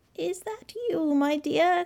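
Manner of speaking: weak, faint croaking voice, very high-pitched. Calling from the bed as a girl reaches her grandmother's open door, in a faint croak. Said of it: "croaked a faint voice".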